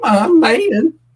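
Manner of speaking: very high, squeaky voice that cracks. Doing a joke impression at the end of a stream: Biden impression. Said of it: "the worst Biden impression I ever".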